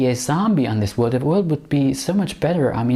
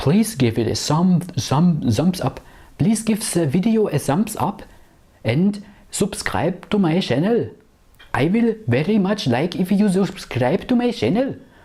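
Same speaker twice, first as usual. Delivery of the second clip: Indian-accented English throughout, pitched up; 5 semitones higher than usual. Talking to the camera for a channel, in an Indian accent. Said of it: "I don't know why I'm talking with an Indian accent".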